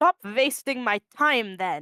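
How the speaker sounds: low, attempted, put-on German accent. Playing the presiding judge in a courtroom scene, put-on german accent. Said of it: "you can tell I'm trying to put on a German accent".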